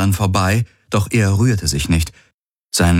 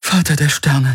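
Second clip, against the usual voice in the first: breathless, panting, high gasping exclamation; 7 semitones higher than usual. Narrating a woman who can hardly believe she is still alive, gasping. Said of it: "keuchte sie".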